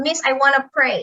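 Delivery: plain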